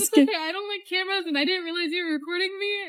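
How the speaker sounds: hushed tearful speech. A woman upset at being recorded, speaking to the person filming, crying. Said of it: "I didn't mean to make her cry".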